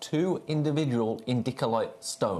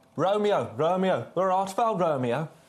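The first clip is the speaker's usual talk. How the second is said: Birmingham (Brummie) accent, pitched up; 6 semitones higher, 3 dB louder than usual. Reading a Shakespeare line aloud as a joke: Brummie accent. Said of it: "the best accent to read Shakespeare in, Brummie accent".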